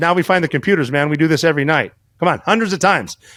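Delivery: ordinary talk, nothing marked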